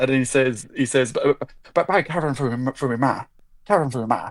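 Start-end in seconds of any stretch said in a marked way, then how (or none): 1.1-4.3 put-on Irish accent, tripping over words, doubling them up. Quoting a movie character's line to another speaker: Brad Pitt's Irish character voice. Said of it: "he plays an Irishman".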